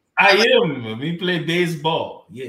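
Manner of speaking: loud, put-on Italian-sounding accent. Answering whether he is Cuban or Dominican, in a Sammy Sosa impression. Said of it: "With that Italian accent".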